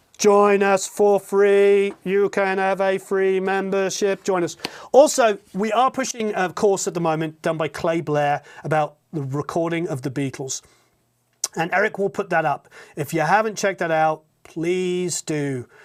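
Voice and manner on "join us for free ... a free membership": slow, drawling put-on zombie voice. Speaker inviting listeners to join the Academy free trial, in zombie voice. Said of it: "I will do my zombie voice again".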